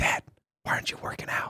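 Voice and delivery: soft, hushed whisper right in the ear. Retelling how a four-year-old wakes his dad on Sundays: imitating a whisper. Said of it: "He whispers in my ear".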